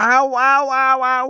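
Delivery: very high, very slow, loud pained cries. Narrator reading Pinkepank's cry as he dances in pain, crying out in pain. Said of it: "riep hij".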